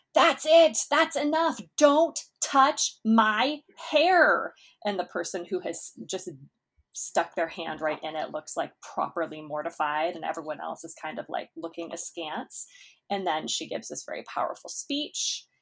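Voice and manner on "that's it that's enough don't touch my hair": very high, slow, drawn-out, loud shout. Describing a story where someone touches her hair, retelling her shout. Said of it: "So she shouts".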